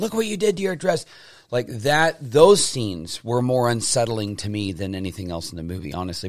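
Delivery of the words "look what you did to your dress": very high, rushed, shrieking scream with scolding tone. Recalling a movie scene after Alice falls in the blood, imitating a movie character screaming at her. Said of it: "she's screaming at her".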